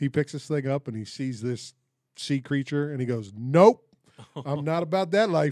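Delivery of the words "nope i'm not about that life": very loud, high-pitched, just short of yelling. Retelling how a man reacted on picking up a sea creature: retelling his loudest voice, not yelling. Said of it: "but in his loudest voice".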